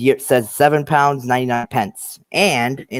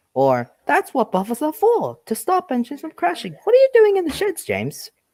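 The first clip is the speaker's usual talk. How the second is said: very high, sing-song cartoon engine, swinging pitch. Offering impressions after being asked, doing Eddie Glenn's Thomas impression. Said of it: "my impression of Eddie Glenn's Thomas".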